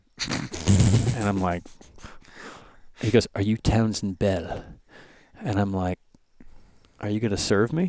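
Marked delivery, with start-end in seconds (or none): 3.4-4.6 put-on South African accent. Retelling a man in the park who came over his shoulder, South African accent. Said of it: "he's got this South African accent".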